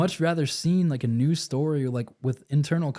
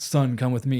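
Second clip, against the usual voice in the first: normal talking voice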